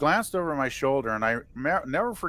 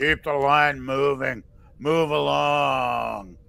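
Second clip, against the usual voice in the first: mock growling voice, very slow. Retelling how security behind the table ordered the line along: imitating security growling. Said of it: "security behind them started growling at me".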